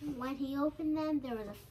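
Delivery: ordinary delivery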